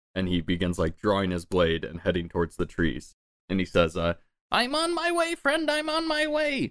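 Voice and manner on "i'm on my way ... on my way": very high, drawn-out, far-carrying shout. Game master voicing a little goblin sprinting toward two players, shouting. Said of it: "As he's just kind of shouting out shit".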